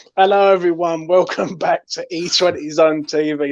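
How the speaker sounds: slow speech through laughter. Host opening a new show episode, laughing while talking. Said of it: "Sorry, I'm laughing".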